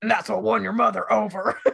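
rough, creaky, gravelly grandfather voice. Retelling the grandfather's remark about the little boat: gravelly grandfather impression. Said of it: "he talks in this gravelly voice".

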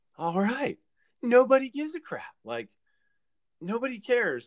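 mock sudden excitement, high and swooping. Retelling what he said once a light bulb went off, acting out his excitement. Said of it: "little light bulb went off and he was excited".

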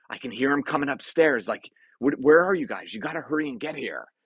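acted frightened, panicky voice. Acting out what this guy said, calling for help; imitating panicked fear. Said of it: "the panic and the fear inside of this guy's voice".

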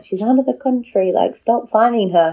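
put-on slight Yorkshire accent creeping in. Quoting mum's letters about being fined for not voting, slight Yorkshire accent. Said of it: "Why did you go slightly Yorkshire when you said that?".

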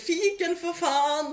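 mock very high-pitched, shrill yell. Telling a story about a club, the speaker quotes someone who shouted, retelling a shout. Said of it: "en som ropte".

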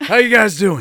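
loud, high-pitched, belted character voice. Retelling a game session, voicing a character called the Mahadi in a Drifter voice. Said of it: "I started talking like this".

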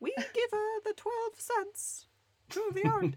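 acted Swedish accent, high pitch. Joking that the streaming service doesn't care, speaking as Spotify in a Swedish accent. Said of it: "That was a Swedish accent, everybody".

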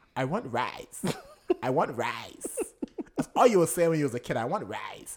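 over-the-top, exaggerated, sing-song grandma voice. Imitating their grandma while telling a family story, exaggerated grandma voice. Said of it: "maybe I am exaggerating her voice".

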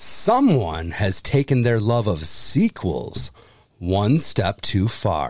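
very low, dramatic movie-trailer narration voice. Quiz host reads a scary movie tagline aloud, movie trailer voice. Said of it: "That was my movie voice".

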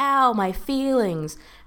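put-on, high-pitched jeering heckling yell. At a game, speaker retells yelling from the bleachers, retelling own yell. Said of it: "I yelled like".

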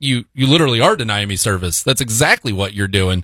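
ordinary delivery

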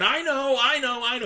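put-on eager, excited child voice, very high-pitched. Retelling a ten-year-old boy eager to answer the joke: imitating an excited boy. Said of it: "he was so excited, he was jumping up and down and going".

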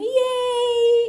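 very high, loud excited whoop.

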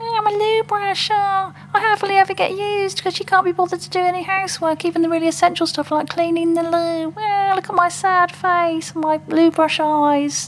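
very high, squeaky put-on puppet voice. Showing how easy it is to do voices, speaking as a loo brush: loo brush puppet voice. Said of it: "talk like this".

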